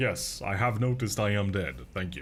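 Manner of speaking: ordinary delivery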